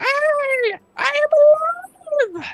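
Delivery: very high, loud, shrill, stretched-out scream. Narrator voices a wounded goblin raising his blade, screaming. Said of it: "blade up and screams out".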